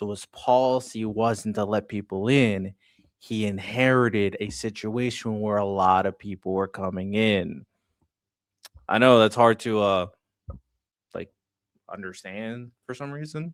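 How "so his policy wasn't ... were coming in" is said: slow, deliberate, condescending, talking-down delivery. Breaking it down for Sean during an argument, speaking slowly. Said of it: "I'm gonna speak slowly for you".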